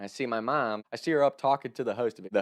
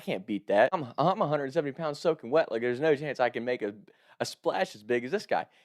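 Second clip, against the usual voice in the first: usual speaking voice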